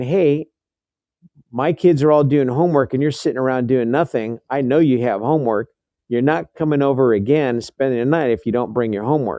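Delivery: ordinary delivery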